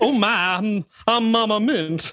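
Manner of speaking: put-on New Orleans madam voice. Joking about a name sounding like a New Orleans brothel madam: put-on New Orleans madam voice. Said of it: "From New Orleans or something".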